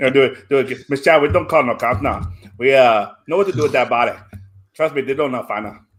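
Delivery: loud, put-on Louisiana bayou Cajun accent. Performer redoing a scripted line in different accents, Cajun accent. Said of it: "That was Cajun".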